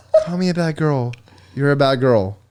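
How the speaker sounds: imitated, put-on flat, monotone delivery. Retelling a nervous line to a partner: imitating own flat delivery. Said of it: "I was literally like this".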